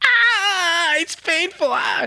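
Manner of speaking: mock very high, very slow, drawn-out wail of pain. Reading a manga chapter aloud, voicing Luffy's line: acted screaming in pain. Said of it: "Luffy's still screaming".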